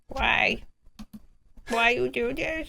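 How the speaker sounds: talking dog voice. The speaker voices the German Shepherd Rex, in a Rex voice. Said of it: "That's my Rex voice".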